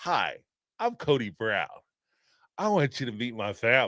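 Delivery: sinister, creepy psycho-killer style voice. Reading a chat note that Cody sounded like American Psycho: Cody Brown like American Psycho.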